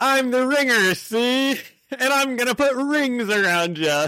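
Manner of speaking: put-on Maryland accent pitched very high. Reading a comic villain's line aloud the way they hear his voice; Maryland accent. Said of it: "That's how I read his his voice".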